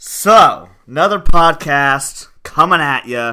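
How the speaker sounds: very loud, drawn-out yelling. Opening a podcast episode, yelling into the mic. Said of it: "I'm yelling into the mic again".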